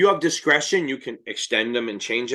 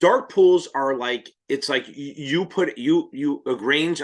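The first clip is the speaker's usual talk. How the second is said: slow, halting stutter, stumbling over repeated words. Struggling to explain how dark pools work, stuttering. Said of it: "I'm stuttering".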